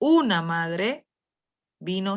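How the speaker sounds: heavy stress landing on una. Explaining stressed indefinite words with an example, stress on una. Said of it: "Porque se da la mayor fuerza de voz".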